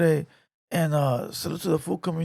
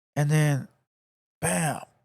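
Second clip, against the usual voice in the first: ordinary talk, nothing marked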